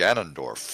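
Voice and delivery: very low, deflated, unexcited announcer call. Imitating a game announcer who sounds flat on one name: mock deadpan announcer voice. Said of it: "extremely psyched about every single character until you get to Ganondorf".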